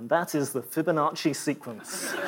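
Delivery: hushed, bone-dry deadpan, very low. Describing a cut video, the speaker quotes someone, retelling it in a very dry voice. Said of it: "somebody in a very dry voice said".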